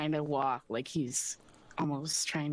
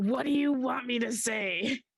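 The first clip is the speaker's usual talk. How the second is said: fed-up, exasperated, frustrated, raised and drawn out; 9 semitones higher, 5 dB louder than usual. Voicing a character who looks at the dragon, frustrated. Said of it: "kinda, like, frustrated, and he's like".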